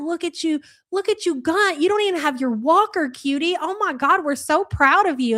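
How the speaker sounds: doting, proud, cheering praise. Cheering someone on like a baby's first steps: mock proud parent. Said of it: "I feel like I'm watching my baby take his first steps".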